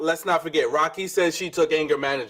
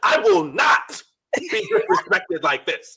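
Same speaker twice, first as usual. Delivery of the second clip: very high, slow, over-enunciated teacher voice; 9 semitones higher, 3 dB louder than usual. Retelling how a friend spoke during an argument: imitating someone talking like a teacher. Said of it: "you started talking like a teacher".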